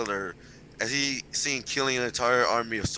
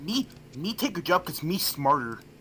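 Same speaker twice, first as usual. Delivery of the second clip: dumb, simple-minded caveman voice; 4 semitones higher than usual. Joking around, the speaker talks like a caveman in a dumb caveman voice. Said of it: "Still, looks a good impression".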